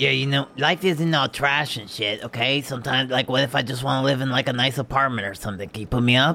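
high goblin character voice. A hairy green goblin talks with the Gunch: goblin character voice. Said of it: "To the average onlooker, you're not quite sure whether I am a very, very hairy goblin or a dog walking around on two legs. My hair is green. My skin is green. My eyes are green. I'm 2'10". I'm pretty".

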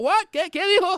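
high, loud, baffled voice.

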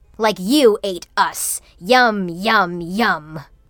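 hissed words. Reading a story where candy bears advance on two characters, hissing. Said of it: "the bears hissed".

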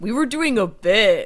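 slow, teasing, mocking voice. Mimicking what another speaker just said: mocking impression of Jeff. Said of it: "here's me doing Jeff".

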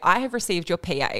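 plain

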